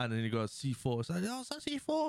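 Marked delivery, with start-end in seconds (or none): 1.2-2.1 high, squeaky little voice. Retelling a story, the speaker voices a man's reaction in Chris Tucker voice. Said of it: "In his little Chris Tucker voice".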